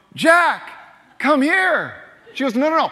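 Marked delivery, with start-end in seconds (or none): 0.2-2.0 put-on happy voice, much higher and slower. Retelling calling his dog as his wife coaches him, acting out a higher, happier call. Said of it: "Make your voice higher".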